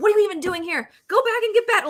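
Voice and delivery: very high, shrill, aggressive yell. Retelling what gets said to a bad teammate while gaming: imitating own yelling at a bad player. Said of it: "I just start yelling".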